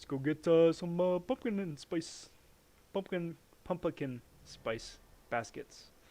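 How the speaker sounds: bumbling cartoon bear voice, fumbled words, many uhs. Mocking own mispronunciation of a word: Yogi Bear voice. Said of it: "Like I'm Yogi Bear or something".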